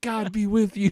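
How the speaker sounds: put-on very heavy Indian accent, very high, loud. Retelling what people said to the speaker, heavy Indian accent. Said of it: "a very very heavy Indian accent".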